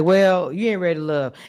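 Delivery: put-on cold-blooded delivery. Retelling how a contestant ended things: imitating a cold-blooded delivery. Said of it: "it was cold-blooded how he did it".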